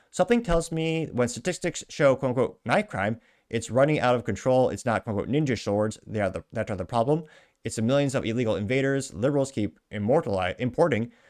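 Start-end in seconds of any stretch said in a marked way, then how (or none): none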